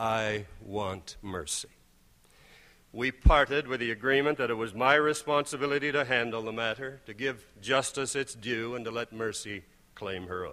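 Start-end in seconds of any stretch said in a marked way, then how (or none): 0.0-1.7 gentle, quiet, low, diminishing voice. Recounting a meeting, repeating their reply to a man's demand, retelling saying it quietly. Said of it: "saying more quietly".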